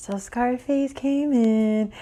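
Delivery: very slow, high, pleased and happy hushed half-whisper. Imitating how Tasiki talks when happy: imitating Tasiki's happy half-whisper voice. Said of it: "she raises the tone of her voice when she's happy, and she talks in, like, this whisper voice".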